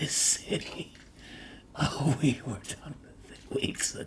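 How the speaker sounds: soft, laughing, mocking creature-like whisper.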